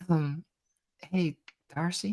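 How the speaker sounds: soft, hushed half-whisper, stage style. In a role-play, one girl approaches another to get her attention: half-whispering. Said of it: "kind of like in a whisper go".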